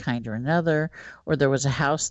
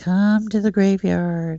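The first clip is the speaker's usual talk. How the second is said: put-on small little boy's voice, high and slow; 6 semitones higher, 6 dB louder than usual. Retelling a ghost calling from a graveyard: little voice. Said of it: "I hear this little voice".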